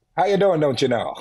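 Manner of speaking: friendly suburban Midwest American accent. Comparing which accents they can do, the speaker tries a suburban midwest accent. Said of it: "I can do suburban Midwest".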